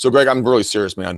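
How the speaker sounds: usual speaking voice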